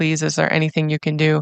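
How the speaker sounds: imitated pleading tone. Retelling a plea to the police officer on the phone: retelling own pleading. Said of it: "I'm just pleading with you".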